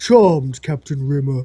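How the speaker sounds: surprisingly deep, low woman's voice. Retelling a scene where a woman answers Rimmer: imitating a really deep voice. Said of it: "the woman says in a really deep voice".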